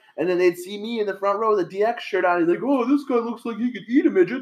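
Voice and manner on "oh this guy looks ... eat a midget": high-pitched cartoonish character voice. Retelling how he mocked the speaker sitting in the front row, Disney character voice. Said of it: "sounded like a goddamn Disney character".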